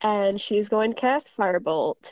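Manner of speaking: ordinary talk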